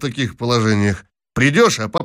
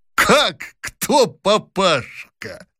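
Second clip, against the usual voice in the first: high snorting scoff, shaking with laughter; 7 semitones higher than usual. A man retorts to another man's question, snorting and shaking with laughter. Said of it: "фыркнул, затрясясь от смеха Лухин".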